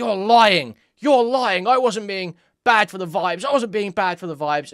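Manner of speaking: mock incensed, appalled, loud and high. Retelling a denial after Ludwig's story: imitating an incensed, appalled Destiny. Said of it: "incensed and appalled that Ludwig would ever say this".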